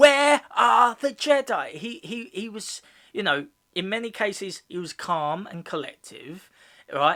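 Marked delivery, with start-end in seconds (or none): 0.0-1.7 put-on shout, much higher, louder. Saying a character was calm, speaker acts out a shout: Darth Vader shouting impression. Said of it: "he never he never went".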